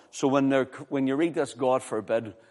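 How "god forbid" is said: ordinary talk, nothing marked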